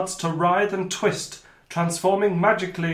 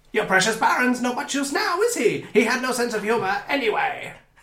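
squealing, cackling villain voice; 4 semitones higher than usual. Game master voicing the cornered villain to the players, squealing Riddling Reaver voice. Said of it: "He squeals".

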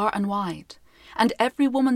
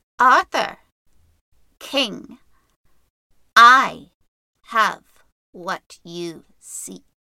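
put-on harsh, rasping, cracking, raised old woman's voice; 6 dB louder than usual. Narrator reading a shuffling figure addressing the king and knights, harsh, cracked voice. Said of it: "It spoke in a harsh, cracked voice".

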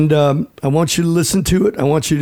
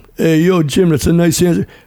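put-on gruff leading-man voice. Replaying the message for someone else: Sylvester Stallone voice. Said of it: "Some joker pretending to be Stallone".

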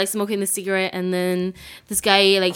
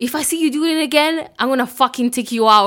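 acted-out angry voice, higher pitch; 5 semitones higher, 4 dB louder than usual. Retelling what a guy said after he got pissed, retelling an angry threat. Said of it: "this guy got pissed".

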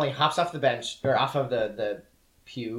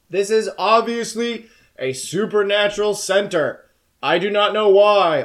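huge booming voice, very high and very loud; 9 semitones higher, 8 dB louder than usual. Retelling a scene, the speaker voices the cat's remark: booming cat voice. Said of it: "The cat says in a very booming voice".

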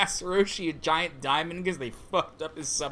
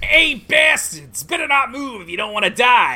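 put-on New York accent, very loud and high; 8 semitones higher, 10 dB louder than usual. A character in her dangerous form threatens a group, in a new york accent. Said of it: "Thanks for giving her a New York accent".

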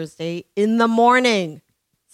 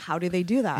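ordinary delivery

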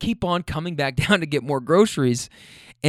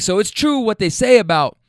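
put-on voice, raised and pitched up, escalating; 5 semitones higher, 4 dB louder than usual. Speaker retells a man arguing as he gets out of a car, retelling a raised voice. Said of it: "his voice is getting raised".

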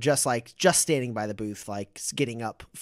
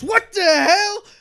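shrill, very high, very loud yell; 11 dB louder than usual. A character yanked upside down by a loop around his ankle, yelling. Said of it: "and he yells".

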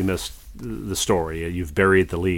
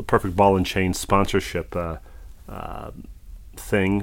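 plain

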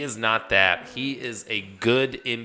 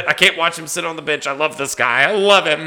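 very loud, high-pitched, raised outburst; 7 semitones higher, 9 dB louder than usual. Retelling how a decision went on the team: David Fizdale impersonation. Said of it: "the best David Fizdale impersonation".

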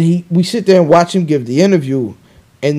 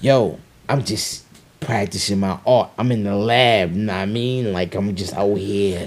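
very low, soft, deep voice; 7 semitones lower, 8 dB quieter than usual. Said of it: "That's a pretty good cannabis impression".

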